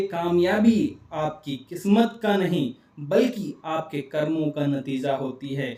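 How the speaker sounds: किस्मत and कर्मों gently, lightly stressed. Showing how to say important words a bit stronger, key words slightly stressed. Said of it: "इन जरूरी शब्दों को थोड़ा सा जोर देकर बोलिए ... इस तरह".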